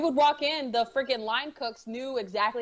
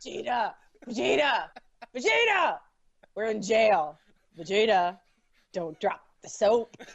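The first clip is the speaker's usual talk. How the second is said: put-on deep brute voice. Calling to Vegeta from jail as Nappa: Nappa voice. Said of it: "I can't do the Nappa voice very well".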